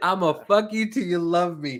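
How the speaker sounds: ordinary delivery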